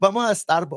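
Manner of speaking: put-on Latin accent pronunciation. Speakers joke about how latin moms say starbucks; saying it in a latin mom accent. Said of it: "that's how all Latin moms say it".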